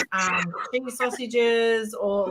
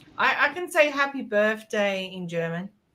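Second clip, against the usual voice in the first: normal talking voice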